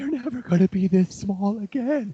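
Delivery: very high, tearful sobbing speech. Retelling watching old videos of the kids, imitating own past sobbing.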